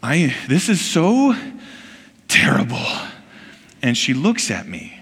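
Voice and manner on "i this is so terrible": simmering, rising, fed-up anger. Retelling complaining to his wife on a long flight: retelling own angry complaint. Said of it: "you can see the anger kind of welling".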